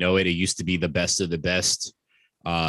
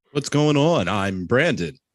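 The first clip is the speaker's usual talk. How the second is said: pitched-up movie-trailer announcer delivery; 5 semitones higher, 3 dB louder than usual. Co-host introducing themselves at the start of the podcast, in a Moviefone voice. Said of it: "It's like movie phone voice or something".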